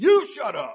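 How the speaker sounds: put-on very loud, high, childish shouting. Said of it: "the other one is responding very eloquently".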